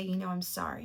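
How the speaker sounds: plain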